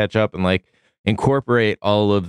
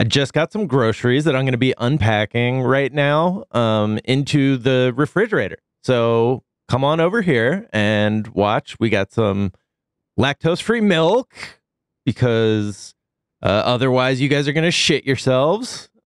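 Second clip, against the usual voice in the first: upbeat social-media influencer voice and cadence; 3 semitones higher than usual. Showing how influencer voice sounds in everyday life, speaking in influencer voice. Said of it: "I don't know if I'm still influencer voicing it".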